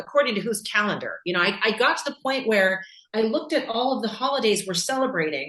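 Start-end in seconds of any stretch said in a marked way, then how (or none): none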